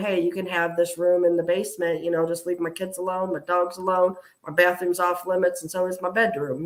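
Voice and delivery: plain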